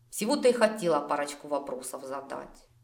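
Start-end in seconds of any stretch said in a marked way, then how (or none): none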